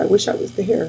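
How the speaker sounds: plain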